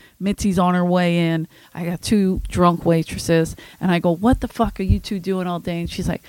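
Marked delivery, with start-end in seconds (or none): 4.2-5.8 put-on angry voice. Retelling asking a waitress what she did all day, imitating own angry self. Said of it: "'Cause now I'm pissed".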